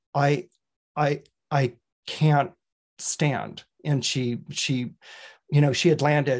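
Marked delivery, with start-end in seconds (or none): 0.1-3.6 very slow, flat, deadpan expressionless delivery. Retelling an injured dancer's words after a rehearsal fall: imitating a flat, expressionless voice. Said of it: "without expression said".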